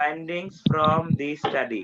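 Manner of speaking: very slow, deliberate, word by word. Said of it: "আমি আস্তে আস্তে বলতেছি".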